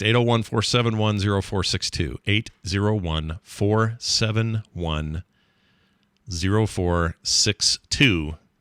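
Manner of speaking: speaking slowly at a deliberate pace. Reading out a phone number so listeners can write it down: speaking slowly. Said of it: "I said that slow so you'd write it down".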